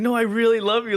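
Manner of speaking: mock tearful, high, loud begging. Retelling how a woman begged a man not to leave, imitating her crying. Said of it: "she's like crying and shit".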